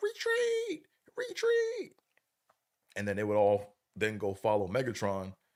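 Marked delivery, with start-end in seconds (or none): 0.0-1.9 acted, piercing, very high, shrill scream. Retelling how Starscream would call to the Decepticons: Starscream screaming retreat. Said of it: "would scream out".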